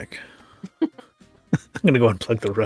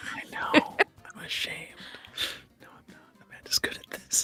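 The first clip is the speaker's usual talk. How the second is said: whispering voice. Answering another player during a quiz, whispering. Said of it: "Why am I whispering?".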